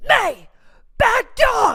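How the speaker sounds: high, loud, sharp scolding yell.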